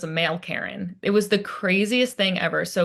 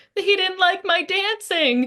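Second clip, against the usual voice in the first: imitated child crying, much higher pitch; 11 semitones higher than usual. Retelling a story about a young nephew, imitating a child crying. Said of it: "crying and his little lip was qu quivering".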